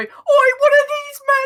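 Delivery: high-pitched, panicked, yelped cry. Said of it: "you hear".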